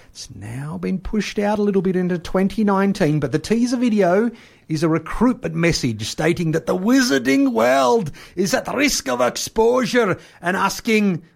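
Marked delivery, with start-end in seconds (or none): 3.2-11.2 put-on Scottish accent. The speaker describes a teaser video's recruitment message: Scottish accent. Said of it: "I don't know why I'm doing a Scottish accent".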